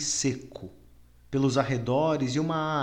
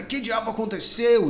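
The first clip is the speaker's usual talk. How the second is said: very high, loud spluttering outburst; 9 semitones higher, 5 dB louder than usual. A man looks up to find Jim beside him and exclaims, sputtering. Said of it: "Exclamou ele em meio aos perdigotos".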